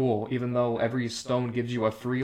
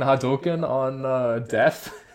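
ordinary talk, nothing marked

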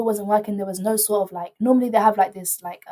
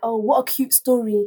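imitated loud speaking voice. Retelling what a woman said while leaving: imitating someone saying it loudly. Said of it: "she said it loudly".

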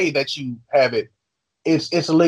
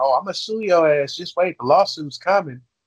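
ordinary talk

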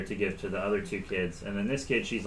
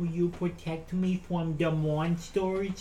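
unsettling put-on child voice, creepy, pitched up; 8 semitones higher than usual. Voicing a girl hiding behind a cloak, the storyteller does a creepy put-on kid's voice. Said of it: "That's his kid's voice, which scares me".

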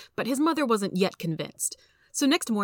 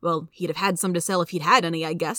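plain

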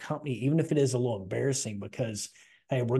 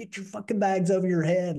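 yelled, pitched high; 7 semitones higher than usual. Retelling how guys yelled orders during the chaos: retelling a yell. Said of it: "they're just yelling like".

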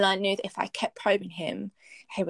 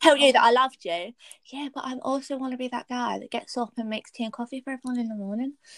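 put-on reality TV accent, higher pitch; 5 semitones higher than usual. Speaker quoting a Love Island contestant to add humour: Love Island accent. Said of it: "I don't know why I did that accent".

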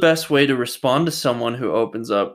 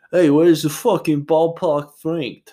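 put-on New York guy accent, pitched up; 5 semitones higher than usual. Describing a man who moved to LA, recalling how he used to talk; put-on New York accent. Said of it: "he used to be so New York".

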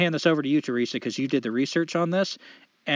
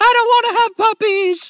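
wailing tearful shriek, very high and very loud; 10 dB louder than usual. Telling a joke, acting out the blonde running from the room, mock-tearful screaming. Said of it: "bursts into tears and runs out of the room screaming".

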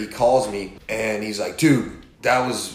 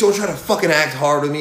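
furious, seething, pitched-up angry rant; 5 semitones higher, 3 dB louder than usual. Retelling how a car owner confronted the speaker: imitating a fuming man. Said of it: "he's fucking fuming".

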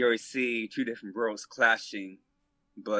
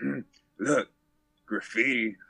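put-on snide, sarcastic jab. Retelling a father pointing at graffiti on a train: imitating dad being sarcastic. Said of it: "all, like, sarcastic and shit".

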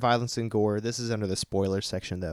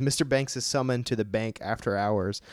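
plain

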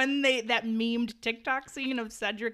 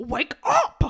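put-on aggressive voice, higher and louder; 6 semitones higher, 8 dB louder than usual. Imitating Hermione waking Harry up: aggressive Hermione imitation. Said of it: "she was extremely aggro this whole movie".

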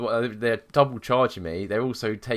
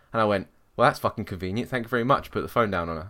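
normal talking voice

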